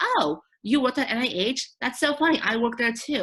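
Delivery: high, loud, surprised, delighted, excited.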